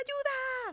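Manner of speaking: high, loud shouted cry. Juan, as a giant bumblebee flies straight at him, shouting for help. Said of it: "Gritaba Juan".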